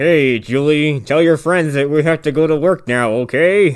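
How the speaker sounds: slow, forced pleasant tone through clenched teeth. Retelling a story, acting out a dad speaking to his daughter, imitating talking through gritted teeth. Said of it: "Just gritting his teeth the whole time".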